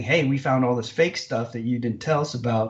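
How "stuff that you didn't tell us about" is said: ordinary talk, nothing marked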